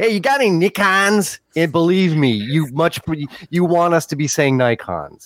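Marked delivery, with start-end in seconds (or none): 0.0-1.4 put-on high-pitched, half-drunk man with Chicago accent. Arguing how Americans say Nikons, speaker does a half-drunk Chicago guy voice. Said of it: "a half drunk guy from Bridgeport in Chicago".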